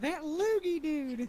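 put-on, all-out scream at full volume. Retelling what Alex does on seeing a spitter: imitating Alex screaming. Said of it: "he just screams".

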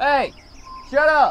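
loud, high-pitched yelling.

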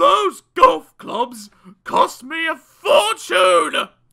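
very loud, very high, shrill storming bellow. Mr. Frightfully Busy, hearing about his golf clubs, storms out; shouting while storming out. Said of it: "he shouted as he stormed out of the room".

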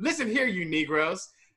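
put-on patronizing voice. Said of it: "he had this tone of like".

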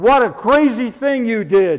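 put-on small, restrained, mild scream. Speaking about forgiving someone, acting out a scream at the top of one's voice. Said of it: "screaming at the top of his voice".

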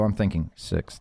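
hushed, confiding whisper. Predicting a team's league finish to another speaker: whispering. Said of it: "I'll whisper this to you".

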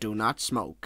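booming voice-of-God narrator style. Imagining a voice of God breaking into a cartoon: Morgan Freeman voice. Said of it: "that's my Morgan Freeman impression".

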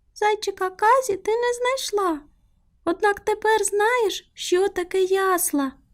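happy, joyful cry, pitched very high. The mouse, after showing the child the manger scene, a joyful exclamation. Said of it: "радісно вигукнула Миша".

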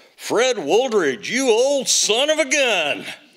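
hearty, booming voice, very high and loud. Retelling an unexpected phone call, the speaker quotes the caller in Bill's booming voice. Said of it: "this booming voice".

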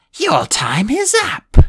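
very high-pitched, very slow, shrill, drawn-out hiss. A woman cuts off the narrator's stammered reply: hissed. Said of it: "she hissed".

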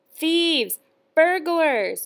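shrill, screeching, accusing shout. A woman grabs a boy's arm as a crowd gathers, shouting. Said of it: "the woman shouted".

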